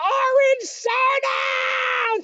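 mock shrill, very high screaming, "soda" stretched long. Retelling how she reacted to a cup: imitating someone screaming. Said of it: "She starts screaming".

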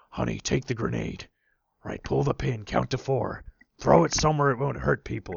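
rough, creaky, rasping, mostly American with faint Scottish touch. Retelling a scene from a film: Liam Neeson impression. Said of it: "he's talking like this, and he's supposed to be slightly Scottish".

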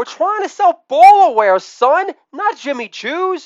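very high, loud yelling. Retelling a dad's courtside shout, imitating a yell from LeVar Ball. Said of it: "LeVar Ball coach Dad yells from the sidelines".

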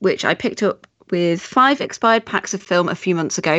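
ordinary delivery

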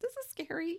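high, mock-scared voice. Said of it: "And I'm just like".

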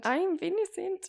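fake German accent. Playing along in a joking denial with a friend, in a bad German accent. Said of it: "I just had to do my bad German accent".

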